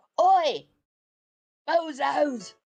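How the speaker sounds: put-on shouting in a London accent. Voicing a character who yells a taunt at enemies: put-on London accent. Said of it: "I've gone London".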